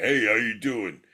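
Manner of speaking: loud big jerk character voice. Recounting a recording session for small characters, performing a big jerk character voice. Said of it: "he's like a big jerk".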